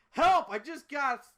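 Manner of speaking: very shrill, very high, very loud panicked cry. Someone rushes down the stairs and turns the corner, cry for help. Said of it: "stomps at the bottom, turns the corner and says".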